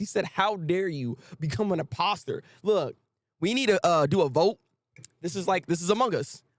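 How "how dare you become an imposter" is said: aggrieved, worked-up, upset exclamation. Retelling what an upset chainsaw man said about the imposter; imitating an upset outburst. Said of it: "he is so upset about this".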